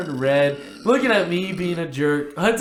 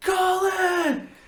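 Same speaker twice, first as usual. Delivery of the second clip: mock very high, long, drawn-out yell; 12 semitones higher than usual. Telling a story, the speaker re-enacts yelling a name in a cafeteria. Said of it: "I just start yelling his name".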